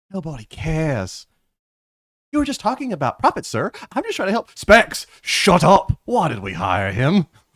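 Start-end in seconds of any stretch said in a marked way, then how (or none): 4.5-7.2 loud, slow, drawn-out scolding. [name] tells Specs off a second time: Gordon Ramsay voice. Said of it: "Why does he sound like Gordon Ramsay now?".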